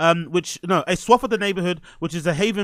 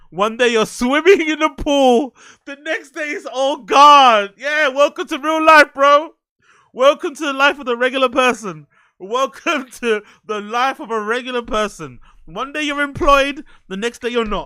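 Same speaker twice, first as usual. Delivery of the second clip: talking through laughter, higher and louder; 7 semitones higher, 6 dB louder than usual. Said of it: "I shouldn't be laughing".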